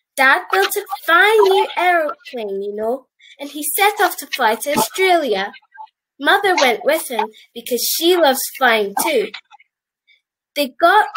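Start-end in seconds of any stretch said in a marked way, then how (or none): none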